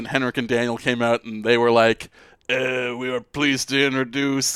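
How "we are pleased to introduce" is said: put-on fake French accent. Retelling a speech by the Sedin twins in a put-on French accent. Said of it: "I don't know why I made them French".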